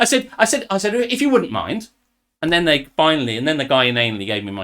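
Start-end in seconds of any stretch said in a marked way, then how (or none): 0.9-1.9 high, acted, polite with a sarcastic edge. Retelling asking staff for a long-delayed latte: retelling own sarcastic reply. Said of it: "with a measure of sarcasm".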